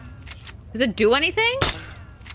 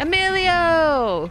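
high, slow, drawn-out stretched call. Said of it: "I gotta say it like that".

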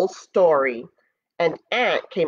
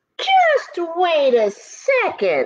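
bold, brave, very high-pitched and swooping; 10 semitones higher than usual. Reading a story, Ant answers the bully goat's threat, bravely. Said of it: "replied Ant bravely".

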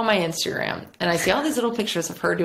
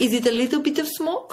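put-on Russian or Italian accent; 7 semitones higher than usual. Retelling what the guy asked about the smoking car: imitating the guy with a Russian-or-Italian accent. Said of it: "like a Russian or something".

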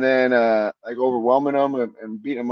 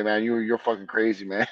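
put-on joking tone, quieter; 3 semitones lower, 5 dB quieter than usual. Retelling what people would jokingly say, in a joking tone. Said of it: "just like jokingly say".

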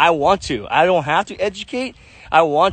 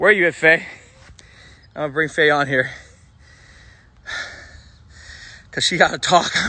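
out of breath, breathless and winded; 4 semitones lower than usual. Before a big announcement, the host calls Faye on to talk, out of breath. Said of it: "I'm out of breath".

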